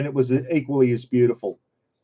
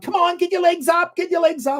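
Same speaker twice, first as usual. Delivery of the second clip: very high, energetic, urging coach-style call. Retelling an instructor motivating dancers through a routine: imitating Richard Simmons motivating. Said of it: "and like he does".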